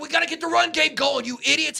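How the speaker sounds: mock frustrated, high, angry barking coach yell. Retelling a coach yelling at his coaching staff, mock yelling. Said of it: "He's yelling at the coaching staff".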